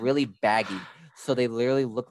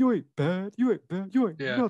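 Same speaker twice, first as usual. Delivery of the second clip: very high, cocky, taunting tone full of attitude; 9 semitones higher than usual. Quoting Rocky in Rocky Three: Rocky with more attitude. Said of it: "He was like".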